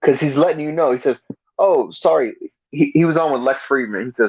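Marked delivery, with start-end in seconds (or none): 1.6-2.3 sarcastic, insincere, put-on sorry. Retelling someone's apology tour: imitating a sarcastic apology. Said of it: "it's sarcasm, what he's doing".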